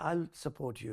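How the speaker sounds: ordinary talk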